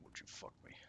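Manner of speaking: very quiet, breathy whisper. Comparing a game character's voice, doing a Buffalo Bill voice. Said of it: "it's based on Buffalo Bill".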